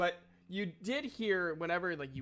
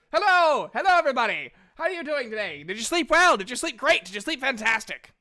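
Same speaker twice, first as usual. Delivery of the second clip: perky, bouncing, very loud, peppy voice; 8 semitones higher, 10 dB louder than usual. Voicing a character who walks over to greet everyone in the morning, peppy. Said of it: "you're a lot peppier this morning".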